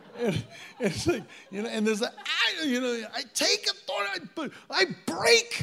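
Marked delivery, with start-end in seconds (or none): 3.1-5.6 very high, fierce, savage intensity. Retelling how intercessors pray in spiritual warfare, imitating savage warfare prayer. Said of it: "really savage".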